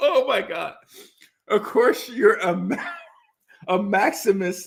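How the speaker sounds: laughing, words breaking up. Reading out a viewer's word and stumbling over it, laughing while talking. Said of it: "I can't even say it without laughing".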